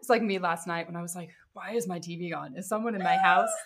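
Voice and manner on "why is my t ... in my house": sounding alarmed. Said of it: "This is how I go".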